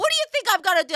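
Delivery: acted irritated, mad tone. Retelling how Mom got mad at a warning: imitating someone getting mad. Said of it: "She got all mad at me".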